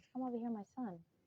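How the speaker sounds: gentle, tender, mild voice. Demonstrating how to call someone over: soft, gentle voice. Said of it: "you see what I did with my voice? ... It's so gentle".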